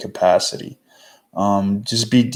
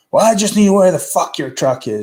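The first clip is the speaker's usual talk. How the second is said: mock shrill, very high, mean screaming; 9 semitones higher, 4 dB louder than usual. Retelling a coworker's phone call to a carrier's dispatcher: imitating a coworker screaming. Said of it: "She was, like, screaming at him".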